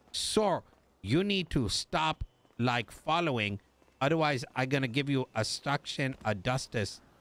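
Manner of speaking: ordinary talk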